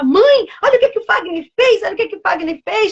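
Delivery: happy, excited voice.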